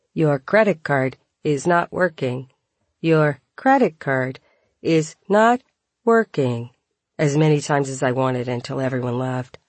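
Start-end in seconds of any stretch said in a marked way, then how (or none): 0.2-6.7 mechanical, machine-like robot voice. The narrator acts out what they could have said instead: robot voice. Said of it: "saying in robot voice".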